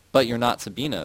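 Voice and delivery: plain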